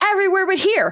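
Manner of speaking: acted, very high, barking delivery. Retelling what a woman in a crowded room snapped at them: retelling a barked reply. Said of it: "she scowls and barks".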